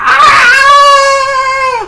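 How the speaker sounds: very high blood-curdling scream.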